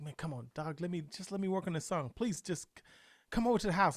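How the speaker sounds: earnest, begging, pleading tone. Retelling a past conversation: retelling own begging. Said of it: "I was begging him".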